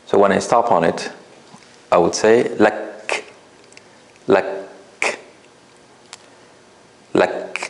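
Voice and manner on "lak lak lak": stopping with a slight breathy release on final k. Showing a learner how to stop on the word: breathy release on final k. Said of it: "block the air and then release a tiny bit of air".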